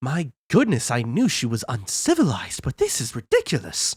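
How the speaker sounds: hushed, under-the-breath gossiping aside. Narrating a scene, voicing an elf commenting on another character: hushed voice. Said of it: "in a hushed voice says".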